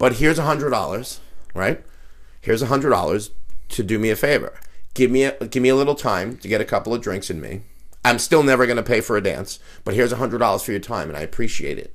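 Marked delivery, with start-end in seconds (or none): none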